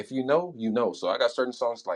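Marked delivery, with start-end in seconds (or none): none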